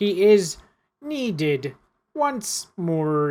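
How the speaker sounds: very slow, loud, croaking voice. Voicing the man with red gloves answering: croaking voice. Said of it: "the man croaks".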